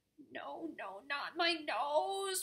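very slow, high wailing cry, nose drawn out. Narrator reads Peabody's plea as Nora aims at his nose, wailing. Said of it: "wailed Peabody".

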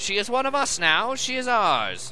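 put-on very high slow drawl, old-time 1930s mobster voice. The Amazonian queen speaks to the captain, in a 1930s mobster voice. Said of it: "she's got the mobster from the 30s voice going on".

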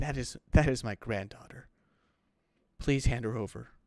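put-on crying, sobbing. Retelling how a grandmother breaks down over her granddaughter: imitating someone crying. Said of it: "And she starts crying".

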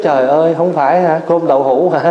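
ordinary delivery

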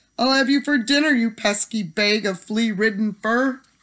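high, threatening yell. The little man, his toe caught by a rabbit, yelling down the hole. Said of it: "the little man yelled down the hole".

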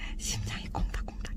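hushed whisper.

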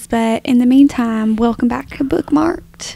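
put-on southern country accent. Podcast co-host welcomes listeners back to bookmark'd, in a country accent. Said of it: "I just put on a country accent".

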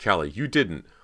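loud, appalled, horrified cry of disbelief. Cody, hearing from her sister Callie what she did, crying out in horror. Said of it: "Cody cried in horror".

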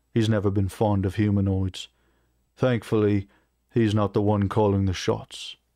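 plain reading voice

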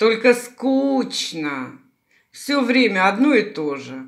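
loud, drawn-out, grumbling, aggrieved tone. Baba Yaga answers the good young man's question; complaining. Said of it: "пожаловалась Баба-Яга".

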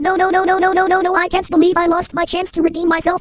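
high female chipmunk voice. In a comedy sketch, a character reacts to failing the retake: lady chipmunk voice. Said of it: "I'm talking like a lady chipmunk again".

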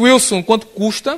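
normal talking voice

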